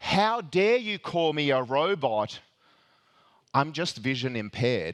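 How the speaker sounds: exasperated, very frustrated and alarmed. Retelling how a chatbot answered a suspicious worker: retelling a frustrated, alarmed reply. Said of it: "very, very frustrated and alarmed".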